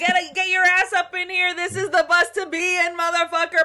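very high, loud hype-man hollering. Acting out the bus partner calling riders aboard: imitating a yelling bus hype man. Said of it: "He's like your hype man".

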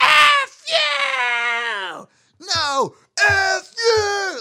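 very high, very slow, shrill, drawn-out shout. Retelling an argument shouted across a deck: imitating a woman screaming back. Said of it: "And then she screams back".

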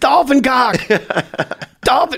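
high-pitched, play-acted yelling out. Speaker retells floating there alone and yelling out to a guy, retelling a yell. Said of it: "I start yelling".

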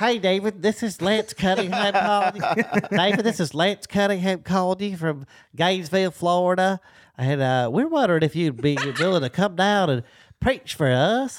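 put-on nasal voice, nose plugged. Practicing a disguised phone call to david, in a nasal, nose-plugged voice. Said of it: "Plug your nose".

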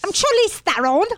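posh British accent. Asked about South African accents, trying a Charlize Theron impression: sounds like Downton Abbey. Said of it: "You sounded like Downton Abbey".

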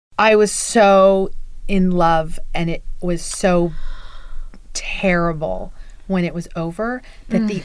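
voice welling with tears, close to crying. A guest introducing themselves and recalling a love that ended, tearing up. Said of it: "I'm tearing up right now".

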